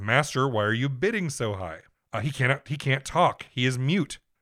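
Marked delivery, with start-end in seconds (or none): 0.0-1.8 loud delivery. Retelling a plot where a character loudly asks his master a question: imitating a loud question. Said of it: "he loudly asks in Arabic".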